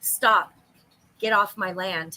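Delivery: slow, flat, level, droning monotone, no lift. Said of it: "he has a very monotone voice".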